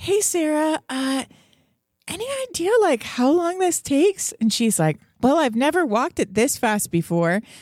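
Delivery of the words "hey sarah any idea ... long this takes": very high, acted, casual-sounding forced calm. Hurrying through a long tunnel, the speaker retells asking Sarah something, imitating forced calm. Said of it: "and I'm trying to sound calm".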